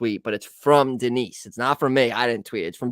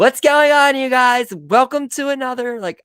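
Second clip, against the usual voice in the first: very high-pitched, hyped-up, energetic voice; 14 semitones higher, 8 dB louder than usual. Showing the intro style the speaker says they can't do, in a fake YouTube persona voice. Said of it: "I can't do that fake YouTube persona".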